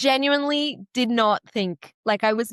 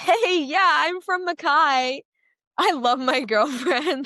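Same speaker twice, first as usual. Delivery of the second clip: put-on Californian surfer accent, pitched up; 6 semitones higher than usual. Imitating a guy who kept mentioning his girlfriend, in a Californian surfer dude accent. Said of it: "Californian surfer dude accent the entire time".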